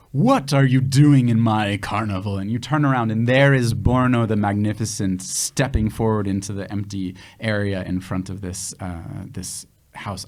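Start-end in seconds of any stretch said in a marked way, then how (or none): 0.1-2.4 big, loud booming voice. Narrating a scene, a sudden voice challenges the intruders: Borno the Magnificent booming voice. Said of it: "all of a sudden a big booming voice".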